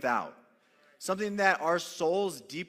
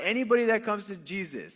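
plain

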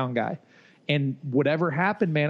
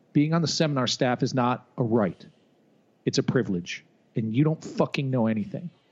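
mock grave, serious, stern lecturing tone; 3 semitones lower than usual. Retelling what John said after shutting the office door: imitating John getting serious. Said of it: "got all serious".

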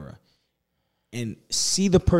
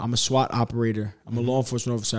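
ordinary talk, nothing marked

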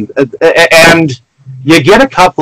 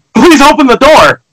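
high-pitched, loud, desperate pleading. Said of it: "he's like".

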